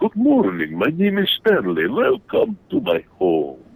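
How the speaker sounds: pitch swinging up and down. Recalling a guest character they played in a show: Stanley the Vampire Bat voice. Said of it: "I played Stanley the Vampire Bat".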